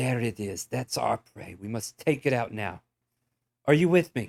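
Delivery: loud, hissing reptilian hunter voice. Voicing a dragonborn urging the party to attack its prey: dragonborn character voice. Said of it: "this dragonborn turns and hisses at you, and it says".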